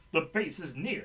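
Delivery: ordinary talk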